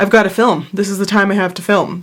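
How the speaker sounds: ordinary delivery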